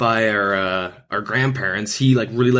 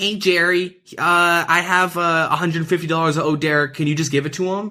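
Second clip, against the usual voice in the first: imitated manipulative tone, higher; 6 semitones higher than usual. Retelling how a kid asked a grandma for money: imitating a manipulative tone. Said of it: "in the most, like, manipulative way".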